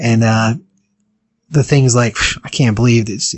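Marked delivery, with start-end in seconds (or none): 2.4-3.3 put-on terrified, fearful voice. Retelling a man's reaction as a woman confronts him, imitating a terrified voice. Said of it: "In his voice, he was so terrified".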